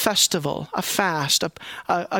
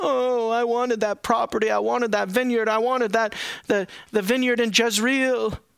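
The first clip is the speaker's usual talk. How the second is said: put-on sulky, pouting complaining voice; 4 semitones higher than usual. Acting out the king as he goes in and starts pouting, mock pouting. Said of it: "he starts pouting".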